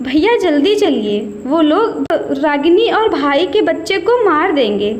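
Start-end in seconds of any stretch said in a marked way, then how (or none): none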